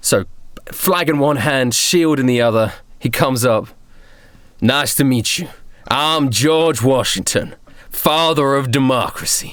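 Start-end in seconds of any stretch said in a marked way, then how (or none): 4.6-9.5 mock American-accented speech. In a game scene, a character with flag and shield introduces himself: American accent as George Washington. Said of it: "I love [name]'s American accent".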